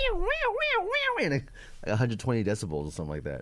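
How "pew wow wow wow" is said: very high, wailing imitated siren sound. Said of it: "you go".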